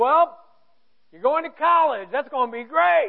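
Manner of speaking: loud, high tough-guy voice. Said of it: "he said".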